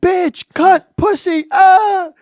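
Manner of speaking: very high, very slow, drawn-out scream. Retelling dropping a friend off while driving: imitating own past screaming. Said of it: "and I'm screaming".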